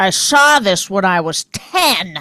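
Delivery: silly, teasing, funny mocking put-on voice. Imitating the present listener's way of decorating; funny voice. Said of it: "I'm just doing a funny voice".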